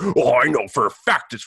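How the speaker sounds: put-on smug, know-it-all certainty. Imagining a listener who claims to know: mocking a know-it-all listener. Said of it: "some asshole's listening. It's like".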